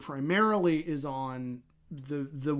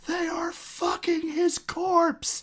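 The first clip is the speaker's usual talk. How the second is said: mock cartoonish scream, higher; 14 semitones higher than usual. Retelling a webcomic where the character, foaming at the mouth, is screaming. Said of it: "and he's screaming".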